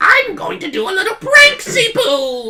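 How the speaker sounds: very high, slow, swooping, spooky-silly sing-song. Posing a silly hypothetical where the specter of time speaks: specter of time voice. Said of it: "Why is the specter of time sound like that?".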